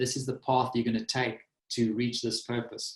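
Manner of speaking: ordinary talk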